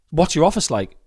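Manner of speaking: plain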